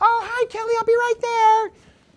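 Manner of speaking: very high, very loud, shrill voice. Showing how front-desk greetings carry over phones, she uses her high voice. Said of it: "That's my high voice".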